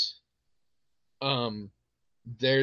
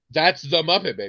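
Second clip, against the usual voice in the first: plain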